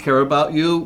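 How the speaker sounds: ordinary talk, nothing marked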